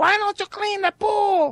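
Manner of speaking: terrible put-on woman's voice, very high pitched. Describing a manager at work quoting his wife, in a bad woman's voice impression. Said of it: "every time he does like a woman's voice".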